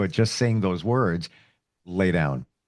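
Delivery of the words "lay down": low-pitched voice, lower. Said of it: "you're using a lower voice".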